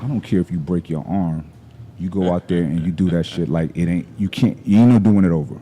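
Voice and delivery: put-on calm, quiet voice. Retelling what CT told him before a lift: imitating CT speaking calmly, quietly. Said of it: "he got real calm".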